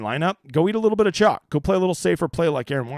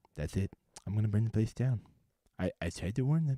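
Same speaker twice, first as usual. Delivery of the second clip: very quiet, low voice, barely audible; 6 semitones lower, 11 dB quieter than usual. Answering a chat remark by doing a Milton from Office Space impression. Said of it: "you sound like Milton from Office Space".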